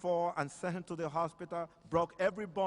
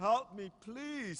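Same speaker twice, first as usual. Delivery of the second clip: loud crying out, pitched high; 5 semitones higher than usual. Retelling how a man cried out to Jesus, acting out a loud cry for help. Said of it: "was crying out so strong out of his lungs".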